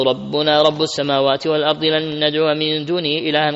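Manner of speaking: usual speaking voice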